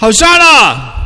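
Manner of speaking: high, loud shout with drawn-out vowels.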